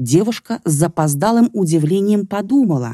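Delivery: plain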